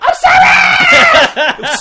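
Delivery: very high, swooping scream. Joking about waking up at night: pretend screaming. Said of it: "I wake up screaming".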